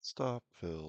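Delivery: mimicked sad automated voice. Describing a trading app's alerts, imitating a sad robotic voice. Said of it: "She sounds so sad".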